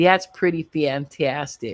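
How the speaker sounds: loud, put-on suburban Chicago accent. Streamer trying the line again for viewers, suburban Chicago accent. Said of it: "Let me try it again".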